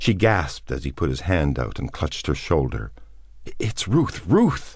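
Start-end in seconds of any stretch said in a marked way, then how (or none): 3.6-4.8 terrified stage whisper, very high, forced out. In the darkness a man clutches her shoulder; terrified whisper. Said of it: "She said in a terrified whisper".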